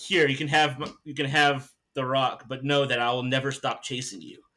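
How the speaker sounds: ordinary talk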